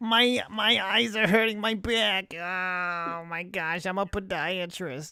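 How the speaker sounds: Yiddish-inflected accent.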